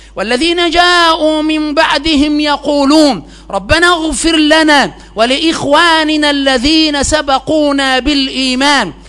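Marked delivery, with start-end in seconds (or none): none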